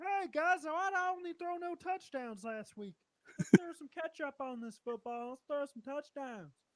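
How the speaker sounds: silly felt-puppet voice. Predicting the Chiefs game, imitating Mahomes in his Muppet voice. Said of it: "putting on his fucking Muppet voice".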